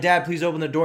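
usual speaking voice

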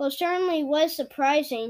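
ordinary delivery

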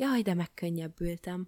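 ordinary talk

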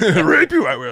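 creepy put-on character voice. Joking about Bill Cosby: Yoda voice. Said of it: "Rapey Yoda creeped me out".

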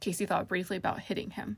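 ordinary delivery

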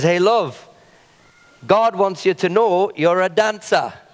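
put-on English accent. Retelling what a man said, the speaker quotes him in his English accent. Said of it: "in his, you know, English accent".

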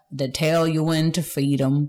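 put-on country accent. Asked to repeat the line in a country accent, trying it out: country accent. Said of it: "That's country there".

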